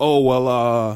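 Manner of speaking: heavy bass voice, dropped low on filler words. Retelling a stranger's answer to a request for help: imitating a deep voice. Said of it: "deep ass voice, deeper than yours".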